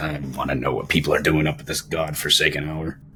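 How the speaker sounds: muttering under breath. Narrator voicing a barkeeper who turns away from the guests: muttering under his breath. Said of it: "you hear him muttering under his breath".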